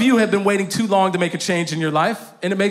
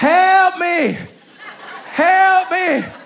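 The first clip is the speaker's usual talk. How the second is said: mock child's wail, very high and very slow; 11 semitones higher, 4 dB louder than usual. Retelling how a three-year-old son screamed leaving the park: imitating a child screaming. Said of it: "begins to scream at the top of his lungs".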